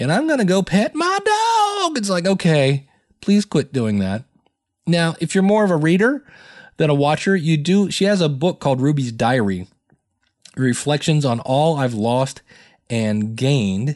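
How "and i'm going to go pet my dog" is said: very high, chatty, announcing voice. Imitating a woman's repetitive way of talking, imitating her speech pattern. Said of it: "her going".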